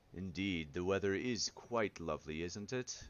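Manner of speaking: deep, low voice. Game master voicing a character who walks up to a player, low deep voice. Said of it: "in a low, uh, deep voice".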